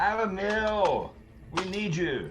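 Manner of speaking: high, drawn-out screaming. A player calling out to Alan Mill in the game: screaming out. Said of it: "I'm just gonna scream out".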